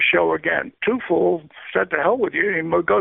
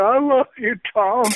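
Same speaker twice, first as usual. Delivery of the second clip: mock high, pitched-up, desperate scream; 6 semitones higher than usual. Retelling a man being pulled away from a plane line, retelling a man screaming. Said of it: "this guy's screaming".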